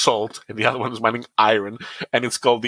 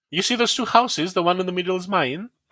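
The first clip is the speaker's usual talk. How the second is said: question-like rise at the end on houses and mine; 8 semitones higher than usual. Mocking how people in the country he lives in talk, with question-like sentence endings. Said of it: "make it sound like there's a question".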